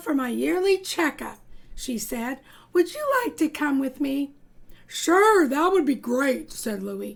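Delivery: plain reading voice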